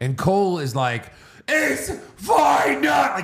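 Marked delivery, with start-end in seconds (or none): 1.5-3.1 very high, hyped-up, excited announcer scream. Retelling how the commentator opened the show: imitating Michael Cole screaming. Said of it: "He screams it".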